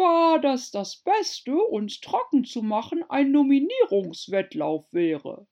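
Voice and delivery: slighted, offended voice. After other birds giggle, a bird replies, offended. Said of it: "entgegnete der Dodo gekränkt".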